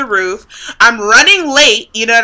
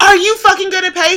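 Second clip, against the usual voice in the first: mock scream, much higher; 9 semitones higher than usual. Retelling an airport scene where they kept saying check a bag: retold screaming. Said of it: "I'm screaming".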